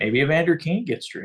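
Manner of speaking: sarcastic tone. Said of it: "I say that sarcastically".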